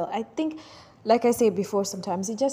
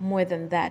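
usual speaking voice

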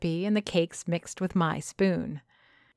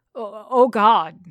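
stammering, louder; 2 semitones higher, 5 dB louder than usual. Stefan, stopped in his tracks by the words, is stammering. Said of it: "he stammers".

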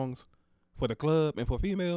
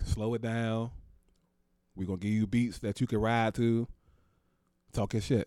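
ordinary talk

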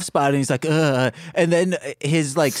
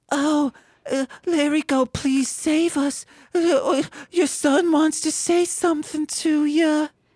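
very high, slow, drawn-out voice; 10 semitones higher than usual. Playing the mother asking the wizard for rescue: mother character voice. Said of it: "I'm the mother".

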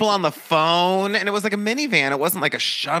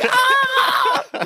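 put-on screaming, higher and louder; 5 dB louder than usual. Retelling passengers on a speeding shuttle: imitating passengers screaming. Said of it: "People would be like".

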